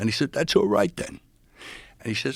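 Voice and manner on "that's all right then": put-on very high, loud, cartoonish elderly man voice. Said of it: "a cross between Jimmy Stewart and Elmer Fudd".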